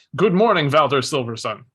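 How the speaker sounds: very loud, booming, hollered at full volume. Narrating a scene, a character looks up and greets a man, incredibly loud greeting. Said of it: "incredibly loudly goes".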